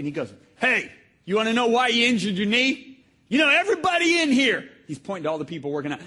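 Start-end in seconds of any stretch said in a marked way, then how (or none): 0.5-4.7 loud, high-pitched, gruff barking voice. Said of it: "he's so gruff".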